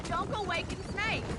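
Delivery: ordinary delivery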